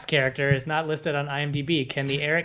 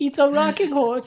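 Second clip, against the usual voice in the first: fake German accent, higher and louder; 12 semitones higher, 4 dB louder than usual. Joking about a kid getting old wooden German toys: put-on German accent. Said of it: "my German accent's not as good as Joe's".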